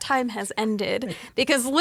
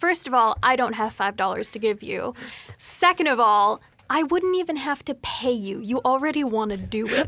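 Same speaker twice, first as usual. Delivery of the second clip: usual speaking voice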